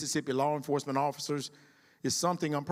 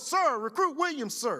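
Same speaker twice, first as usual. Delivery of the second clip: very high shouted voice, put on; 10 semitones higher than usual. Retelling how the oldest recruit sounded off to him: retelling a recruit's yell. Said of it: "She yelled".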